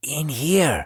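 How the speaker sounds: faint, hushed little half-whisper. Retelling to companions what the voice said: imitating a little half-whisper. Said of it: "So it was like a little whisper".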